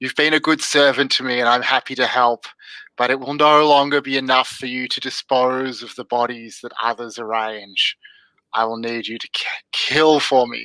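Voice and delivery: horrifying, eldritch, demonic entity voice. Narrating a scene, voicing a demon speaking to its servant Kane, eldritch demonic voice. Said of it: "in this horrifying kind of eldritch demonic voice".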